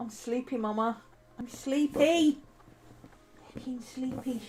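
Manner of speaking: high-pitched, put-on dog voice. Speaking for the sleepy dog after belly rubs: voicing Maddie the dog. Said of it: "she says".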